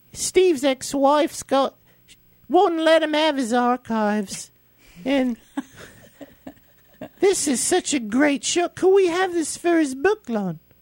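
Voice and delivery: put-on earnest, very high-pitched English accent. Retelling what Jo asked about the photo: English accent imitating Jo. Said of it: "I'm just trying to be English".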